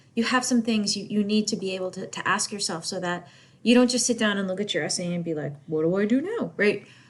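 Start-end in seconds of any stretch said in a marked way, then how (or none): 5.7-6.6 made-up dog voice. Speaker explaining essay questions slips into the dog's imaginary voice. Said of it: "that was actually my dog's voice".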